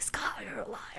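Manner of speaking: hushed whisper.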